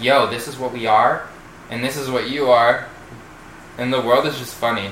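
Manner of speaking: plain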